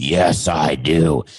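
very low, deep voice dropped way down. Voicing Wilson the volleyball as a guest: deep Wilson voice. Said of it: "I didn't think Wilson had such a deep voice".

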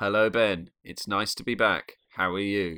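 robotic, stilted, robot-like delivery. A podcast co-host greets the other host at the episode's start, sounding like a robot. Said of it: "I sounded like a robot".

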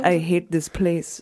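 put-on Russian accent in a woman's voice.

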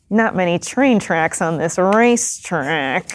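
musing, murmured under the breath as aside. Voicing a racer looking around the track: murmuring to himself. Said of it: "he murmurs to himself".

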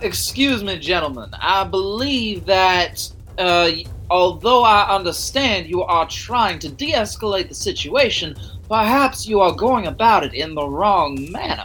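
put-on genteel, polite, well-mannered Southern gentleman accent. A player in a tabletop game addresses some gentlemen in character, in a polite Southern accent. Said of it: "the voice of a Southerner with impeccable manners".

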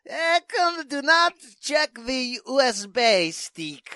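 very high, very slow, squeaky put-on voice, drawn out. Imitating someone trying to do a voice: Vlad voice. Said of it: "Frampton trying to do the Vlad voice".

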